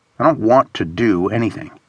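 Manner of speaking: plain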